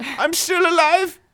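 put-on pained scream. Acting out a man stuck in a cave, like the Austin Powers scene: screaming. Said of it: "they can hear him screaming like that Austin Powers scene".

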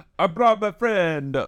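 put-on Italian accent. Opening a pitch-meeting scene, announcing a friend: italian accent. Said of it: "this is Italian voice".

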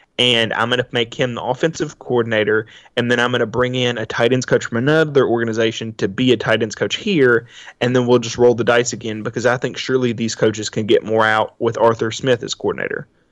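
ordinary talk, nothing marked

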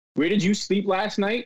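ordinary delivery

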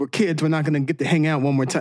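ordinary delivery

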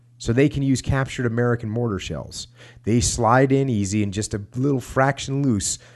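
ordinary talk, nothing marked

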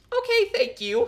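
awkward, polite, very high squeaky voice. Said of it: "I'm like".

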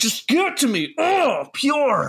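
slow, swooping voice of a junkie craving. Joking about craving the movie's emotion while smacking a vein: pretending to be a drug addict. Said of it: "Just smacking my vein".

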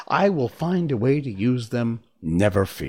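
ordinary delivery, nothing marked

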